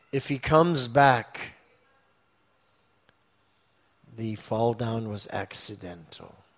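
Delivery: mock deeply solemn, weighty, grave, low and hushed. Retelling a reply given to a question after a pause: very grave tone. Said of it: "in a very grave tone of voice".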